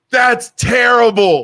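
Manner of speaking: loud, high-pitched, mock shouted yell. Retelling how a woman kept yelling during a game; imitating someone yelling. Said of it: "she would yell something".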